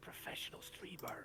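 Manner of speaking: slow, hushed mock whisper. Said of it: "what we're whispering about".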